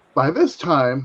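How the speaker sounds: voice cracking. Telling a personal story, voice cracking. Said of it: "sorry, my voice cracked".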